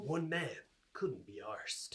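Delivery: deep-toned movie trailer voice-over announcer style. Narrating the other person's situation like a film advert: movie trailer voice. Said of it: "Movie trailer voice".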